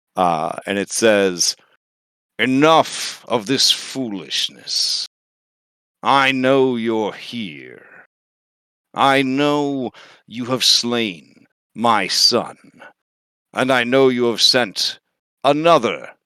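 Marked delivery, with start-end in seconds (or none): 2.4-16.0 echoing, resonant villain voice resounding all around. Narrating to the players, the voice of Sidon speaks to them: booming voice of Sidon. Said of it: "a booming voice".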